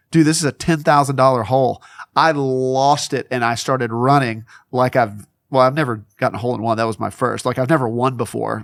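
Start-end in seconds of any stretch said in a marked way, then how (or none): none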